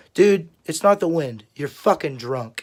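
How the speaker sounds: plain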